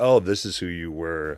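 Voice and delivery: ordinary delivery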